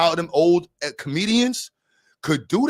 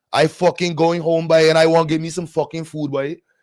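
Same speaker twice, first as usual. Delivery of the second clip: Trinidadian accent; 4 dB louder than usual. Trying out a Trini accent while unsure it isn't Guyanese, Trini accent. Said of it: "I don't know if that's Guyanese or Trini".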